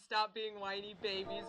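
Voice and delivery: ordinary talk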